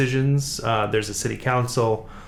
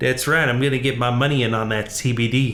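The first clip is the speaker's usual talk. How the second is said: put-on fake Southern accent. In a casual chat, answering a question in a put-on Southern accent. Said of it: "(Southern accent)".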